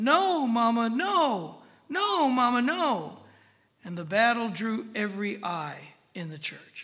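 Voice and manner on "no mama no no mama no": put-on very slow, high, loud, dragged-out child yell. Telling of a mother marching her son down a church aisle, retelling a little boy's yell. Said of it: "the little boy dragged his heels and yelled".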